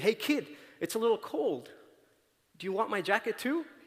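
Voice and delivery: high, called-out yell. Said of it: "he yells out at the kid".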